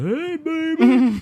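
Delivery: put-on flirty high call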